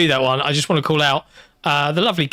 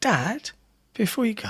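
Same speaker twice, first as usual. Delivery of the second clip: put-on young girl voice, pitched up; 6 semitones higher, 7 dB quieter than usual. Retelling a daughter's words at bedtime: imitating his daughter. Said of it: "And she just went".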